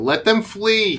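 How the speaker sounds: shouting baron voice. Voicing the Baron yelling to his people: yelling Baron. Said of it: "you hear the Baron yell".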